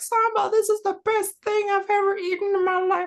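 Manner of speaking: very high, squeaky cartoon mouse voice. Quoting a compliment on their food, the speaker does a Vince Gilligan impression. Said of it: "That's my Vince Gilligan impression. It's more like Mickey Mouse".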